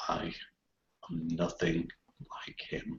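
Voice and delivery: very quiet, high muttering under breath. A player's character answers a provoking remark, under the breath. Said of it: "under my breath, quite quietly".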